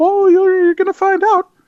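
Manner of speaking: very high, squeaky voice crack. Teasing listeners about coming changes, voice cracking oddly. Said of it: "I don't know why my voice did that".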